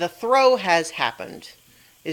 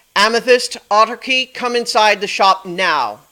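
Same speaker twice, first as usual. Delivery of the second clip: very loud, high, booming, thunder-like amplified voice; 5 semitones higher, 9 dB louder than usual. A character comes out the door calling two others into the shop, magically amplified voice. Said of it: "in a like magically amplified voice".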